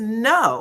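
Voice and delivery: drawn-out "no" dripping with attitude. Retelling a cast member's answer: imitating a "no" with attitude. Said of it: "like, with an attitude".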